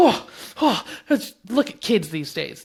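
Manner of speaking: put-on indignant, huffy adult grumble, loud. Mocking the reaction to a teen teasing a child: imitating a huffy adult. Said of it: "Get all huffy and be like".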